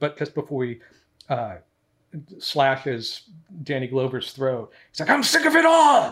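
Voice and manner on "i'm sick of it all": play-acted furious outburst, very high and loud. Quoting a film villain just before he slashes a throat: imitating John Kramer's angry outburst. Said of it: "it's really angry".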